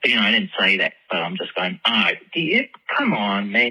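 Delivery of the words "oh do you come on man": put-on Australian accent. Retelling what was said while faking an accent: imitating own fake Australian accent. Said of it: "and I'll drop the accent".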